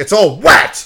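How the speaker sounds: play-acted furious outburst, very loud and shrill. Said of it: "so fucking pissed".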